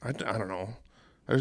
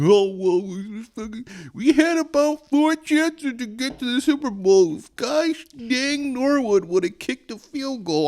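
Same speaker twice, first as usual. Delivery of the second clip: put-on hundred-year-old man voice, very high; 14 semitones higher, 4 dB louder than usual. Imitating a text or call from dad: imitating dad sounding a hundred years old. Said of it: "I'm making him sound like he's a hundred".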